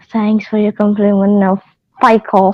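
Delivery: quiet, passing mutter under the breath. Voicing a character answering a compliment: muttered under his breath. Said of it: "Rand will say under his breath".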